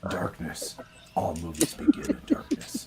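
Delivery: low, slow, breathy rasping voice. Joking along after low-pitch advice: Lego Batman voice. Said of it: "lower your pitch as low as you can".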